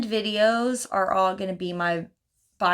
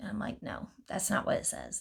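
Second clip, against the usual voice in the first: ordinary talk, nothing marked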